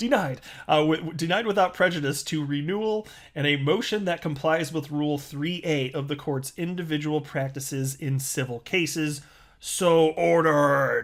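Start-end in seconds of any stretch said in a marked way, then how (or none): 9.6-11.0 very loud, all-caps shouted pronouncement. Reading a court order ending written in all capital letters, loud as in capitals. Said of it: "I said it like that because that was also in all capital letters".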